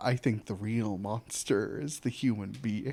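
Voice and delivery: sudden shift to a dark, very low, hushed murmur. Retelling a movie scene where the character suddenly goes dark: imitating a character going dark. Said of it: "and then he goes dark".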